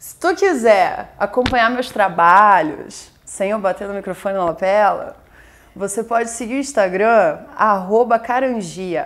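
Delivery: loud Carioca accent from Rio de Janeiro.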